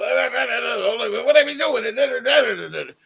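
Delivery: very slow, stretched what. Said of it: "it is very Jackie Gleason".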